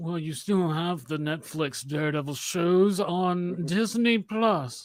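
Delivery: very slow, smug, superior British villain drawl. Imitating what Kevin Feige would say in a room: Kevin Feige as condescending British villain. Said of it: "he sounds like fucking some British fucking villain".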